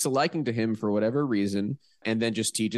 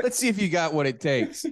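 exaggerated thick New York accent, higher pitch; 7 semitones higher than usual. Acting out a boss testing a young worker: imitating thick New York accent. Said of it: "way thicker New York accents".

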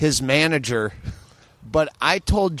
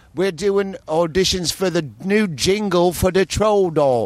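horrible put-on British accent, pitched higher; 3 semitones higher than usual. Retelling a comic's troll doll bit: imitating Jimmy Fallon's horrible British accent. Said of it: "and then a horrible British accent".

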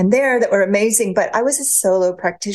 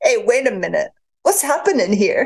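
imperfect put-on New Jersey accent. Retelling what a lover once said to her: imperfect New Jersey accent. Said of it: "my New Jersey accent's not the best".

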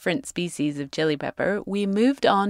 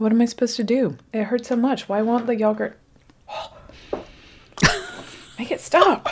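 pained, distressed voice, pitched higher; 5 semitones higher than usual. Tasting a very hot pepper, mouth burning: in pain from spicy pepper. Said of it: "oh God, my mouth hurts".

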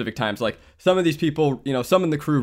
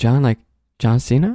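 put-on whisper; 5 dB louder than usual. Retelling how someone in the waiting room reacted: imitating Garrick's whisper. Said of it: "he whispers".

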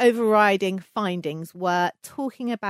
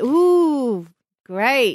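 play-acted, dry, sarcastic tone with drawn-out ooh; 4 semitones higher, 6 dB louder than usual. Retelling own reply to talk of a magical number: retelling own sarcastic reply. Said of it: "That's a sarcastic great".

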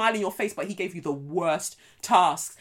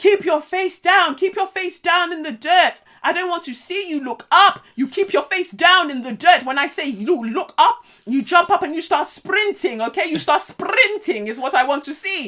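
put-on South African accent, very high and loud; 10 semitones higher, 8 dB louder than usual. Retelling what a man from the South African Special Forces said, in a South African accent. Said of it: "It's okay with the accent".

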